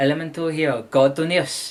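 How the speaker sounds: put-on Japanese accent pronunciation. Introducing a favorite card monster by its Japanese name, in a Japanese accent. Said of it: "You gotta throw that Japanese accent there".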